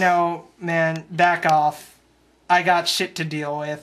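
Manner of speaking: plain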